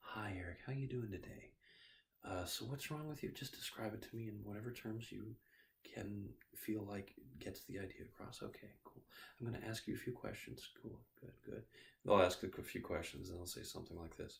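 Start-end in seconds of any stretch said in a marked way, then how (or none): 0.0-11.6 gentle, calm, soothing bedside-manner tone. Showing how a doctor greets eric at an appointment, imitating a calm, soothing voice. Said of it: "the doctor talks to us in a very calm, soothing voice".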